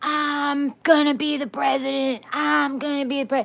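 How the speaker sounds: very high, screaming tantrum-like fit. Retelling someone grabbing the limo wheel: imitating someone screaming. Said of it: "was screaming".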